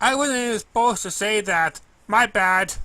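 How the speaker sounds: sheepish put-on pony character voice. First-person narrator reading the story voices Derpy speaking to the narrator: Derpy voice. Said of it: "or as I know her as Duper Hooves. She was somewhat the same boy as me, since that she understood my feelings. Dipper has probably ignored other ponies well, just because her eyes never seem to focus i".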